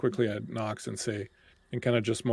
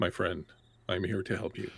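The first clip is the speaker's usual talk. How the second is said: gentle, caring bedside manner voice, lower in pitch; 3 semitones lower, 4 dB quieter than usual. Kneeling by a dying man, switching to a bedside manner voice. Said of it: "suddenly my voice changes as I'm like".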